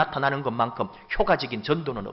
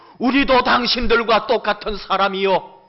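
raised, protesting, loud, high-pitched shout; 8 semitones higher, 7 dB louder than usual. Retelling how the apostle Paul cried out to the priests of Zeus: retelling a shout. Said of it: "막 소리 지르는 거예요".

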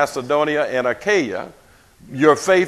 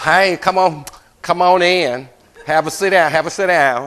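put-on, hollow, plastic, fake-friendly phone-lady voice; 2 semitones higher than usual. Imitating a woman on the telephone from a tv show: fake plastic greeting. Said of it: "that's kind of what that plastic sounds like".

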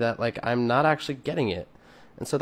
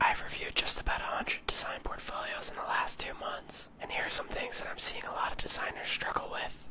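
hushed whispering, much quieter. Back on TikTok after a while, addressing designers, whispering. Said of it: "I'm whispering".

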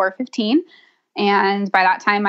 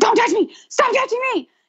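put-on very high, piercing, shrieked outburst. Recalling being in writhing pain when someone came close, retelling a scream. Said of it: "I just started screaming at her".

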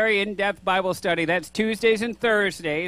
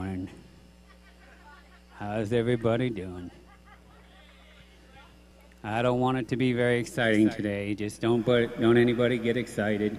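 dull unexcited tone, much lower and quieter; 8 semitones lower, 4 dB quieter than usual. Greeting the audience, showing how a tone changes everything, deliberately unexcited tone. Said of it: "Isn't it funny how a tone of voice will change everything".

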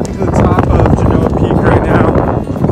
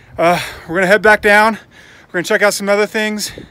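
a little short of breath, winded talk; 3 semitones higher, 3 dB quieter than usual. Filming at a lookout, telling viewers the plan, out of breath. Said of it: "I'm out of breath a little bit".

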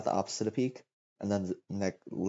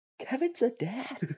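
very high, shrill yell. Retelling how a friend reacted while watching: imitating a friend yelling. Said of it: "my friend just yelled".

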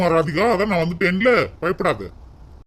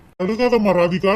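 plain

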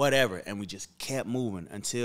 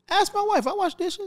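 very high, insistent, louder protesting voice; 6 dB louder than usual. Told he's too wealthy to wash dishes, he answers, voice going high. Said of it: "You see how his voice went high?".

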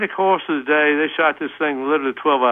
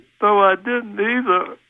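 mock small, sorry, very sad voice, pitched up; 6 semitones higher than usual. Retelling what a voice in the horse barn said: imitating a real sad voice. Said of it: "this real sad voice said".

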